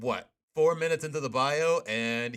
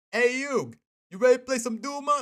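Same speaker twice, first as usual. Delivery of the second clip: clumsy, high-pitched put-on Brooklyn accent; 12 semitones higher, 4 dB louder than usual. Talking about favorite Yu-Gi-Oh characters, the speaker does a bad Joey impression. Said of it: "I do a terrible impression".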